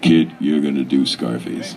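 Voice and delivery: dropped very deep voice. Telling how he got the Scarface script, quoting Marty Bregman's very deep voice. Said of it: "in a very deep voice".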